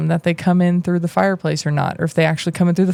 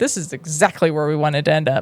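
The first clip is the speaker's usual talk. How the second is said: sarcastic tone; 3 semitones lower than usual. Reading a book scene aloud, Fred answers Ron: sarcastic. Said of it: "came Fred's voice sarcastically".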